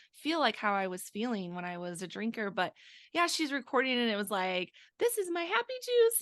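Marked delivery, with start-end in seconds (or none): 5.0-6.2 tiny, cutesy, very high cute little voice. Retelling a video she recorded while holding her wine, in a cute little voice. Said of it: "it was like a cute little voice".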